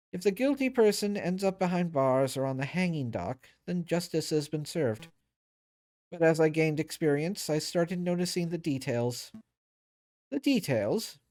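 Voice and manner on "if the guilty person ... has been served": ordinary talk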